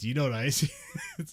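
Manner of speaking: talking down, patronising tone. Retelling own earlier question to the other speaker: imitating a condescending question. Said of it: "Now I just asked you condescendingly".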